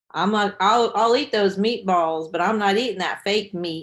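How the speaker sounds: loud southern drawl. Retelling what their dad said at dinner, imitating Dad's southern drawl. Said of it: "he says in his southern drawl".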